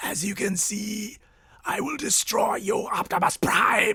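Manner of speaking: quiet, high-pitched, villainous evil robot voice. Doing impressions on request, the speaker tries a Generation One Megatron voice. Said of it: "Generation One Megatron".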